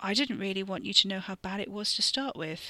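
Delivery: ordinary delivery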